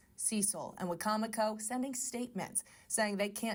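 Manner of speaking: normal talking voice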